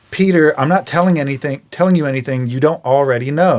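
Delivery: ordinary talk, nothing marked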